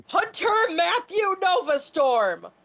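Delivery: big, theatrical, high, swooping announcer-style scream. Playing a character who silences a tavern: screaming a full name. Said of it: "I'm gonna scream".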